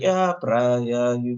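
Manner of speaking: mimicked flat unexcited delivery. Imitating a tv character's delivery: imitating a deadpan voice. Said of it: "I just love her deadpan, her deadpan voice".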